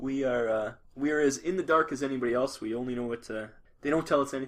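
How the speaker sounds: normal talking voice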